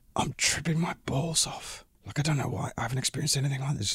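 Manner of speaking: hushed, very soft, breathy, confiding whisper. Retelling what he whispered to a woman after a gig, whispering. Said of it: "I just whispered to her and I went".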